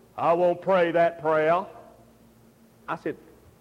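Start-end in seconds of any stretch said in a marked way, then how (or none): 0.2-1.7 put-on Mississippi accent, much lower and slower. Retell how Dr. Ray refused a prayer request, in Dr. Ray's Mississippi accent. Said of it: "in his Mississippi accent said".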